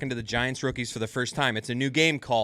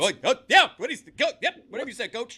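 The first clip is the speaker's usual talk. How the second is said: flustered, stammering, pitched-up scramble, caught off guard; 11 semitones higher, 3 dB louder than usual. Imitating coaches in a back-room meeting caught off guard when called upon: imitating a coach caught off guard. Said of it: "the coaches are not expecting to be, like, called upon".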